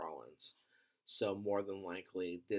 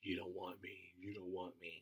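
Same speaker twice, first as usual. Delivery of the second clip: muttering, much quieter; 6 dB quieter than usual. Retelling Roman's reaction when Cody points at him, imitating Roman muttering. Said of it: "Roman immediately just starts muttering".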